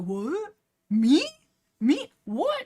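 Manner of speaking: very slow, high, drawn-out, stunned dumbfounded disbelief. Retelling a story scene, the speaker acts out Fireheart's reaction, imitating Fireheart dumbfounded. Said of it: "my man is just dumbfounded".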